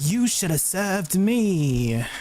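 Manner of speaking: slow, sassy British witch voice, "me" drawn out. Imitating a witch's line: imitating a sassy British woman. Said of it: "really sassy British woman".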